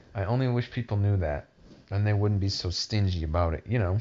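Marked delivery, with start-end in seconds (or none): none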